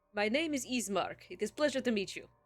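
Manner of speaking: welcoming, well-mannered, friendly nobleman voice. Voicing a noble at a table inviting the party over: voicing a friendly noble. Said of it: "He thrusts out a hand and".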